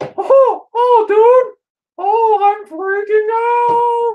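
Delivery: squeaked out, high and drawn out. Asked to do the voice, speaking as Mickey Mouse on acid. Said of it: "Now do the voice where you do Mickey Mouse".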